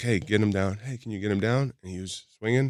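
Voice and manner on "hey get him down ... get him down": ordinary talk, nothing marked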